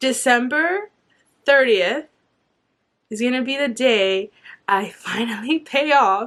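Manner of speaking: tearful crying, voice cracking and breaking. Sharing the date a long debt will be paid off, the speaker starts crying. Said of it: "I'm crying".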